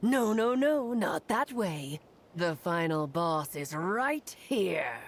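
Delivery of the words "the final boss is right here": put-on monster voice. Teasing the adventurers as a hidden final boss: [name] pretending to be a monster. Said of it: "[name] pretending to be a monster".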